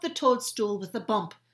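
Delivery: plain reading voice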